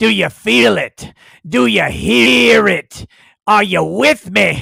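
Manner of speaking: loud, rough, gruff preacher voice, "hear" stretched. Welcoming viewers to the LawTube channel, the host asks questions in a gruff voice. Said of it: "that gruff voice".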